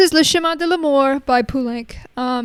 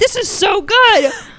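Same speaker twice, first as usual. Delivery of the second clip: very loud, high, blurted-out exclamation; 9 semitones higher, 7 dB louder than usual. Retelling a first sip of a drink: retelling own loud exclamation. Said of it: "said very loudly".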